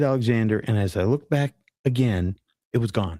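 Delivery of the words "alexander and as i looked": plain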